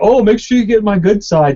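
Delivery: play-acted joking teasing with a mean edge. Retelling what a sergeant said about being filmed: mean joking tone. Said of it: "it was kinda like, like a mean tone".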